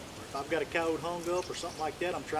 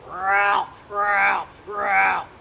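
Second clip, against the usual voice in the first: booming, very loud, raw, rough, drawn-out distress cry; 4 semitones higher, 11 dB louder than usual. Demonstrating how to do the distress part of a fox call, drawn out. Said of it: "lengthen it out".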